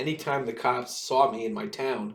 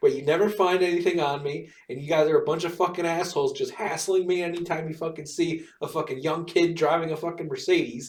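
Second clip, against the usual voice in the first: angry, heated, pitched-up rant; 5 semitones higher than usual. Retelling yelling at cops searching the car: retelling own yelling at cops. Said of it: "I was yelling at the cops saying".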